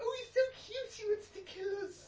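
high, loud, gushing coo pitched way up.

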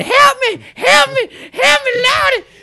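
shrill, very high, loud screaming. Retelling how a woman reacted when he reached into her money cup, imitating a woman screaming. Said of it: "she starts screaming".

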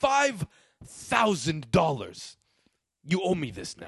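slow, drawn-out film-star voice with wide pitch swings. Retelling a movie scene about losing five thousand dollars: Al Pacino impression. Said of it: "it's the part when he was like".

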